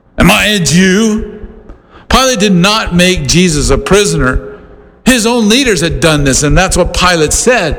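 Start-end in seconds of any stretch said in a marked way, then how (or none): 0.2-1.5 mock very slow, disgusted, disdainful sarcasm. Retelling a ruler's reply to a prisoner: imitating Pilate's disdainful sarcasm. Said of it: "Pilate had disdain in his voice, a disgust, and a sarcasm".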